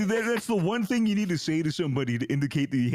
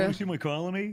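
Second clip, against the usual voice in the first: plain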